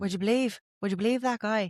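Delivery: hesitant, attempted Irish accent. Trying out a line the other speaker gives, in an Irish accent. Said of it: "an Irish accent".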